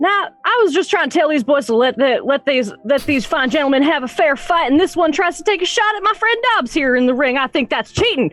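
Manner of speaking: shouting. A player voicing their character Ash during a tabletop game, shouting. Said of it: "she just kind of shouts like".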